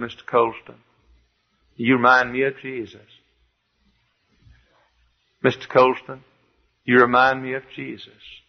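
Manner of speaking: slow, stretched-out southern drawl. Quoting what R G Lee told a colleague: R G Lee southern drawl. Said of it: "Doctor R G Lee said with his southern drawl".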